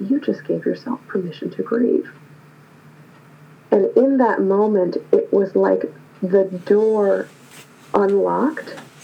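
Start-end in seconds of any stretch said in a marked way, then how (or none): 0.0-2.1 hushed, almost whispered little inner voice. Retelling a little inner voice that answered the speaker's question, near whisper. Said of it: "almost at a whisper level".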